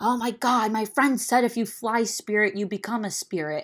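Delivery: mild, blurted-out yell. Retelling what a passenger behind on the plane said: imitating someone yelling. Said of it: "just yells out".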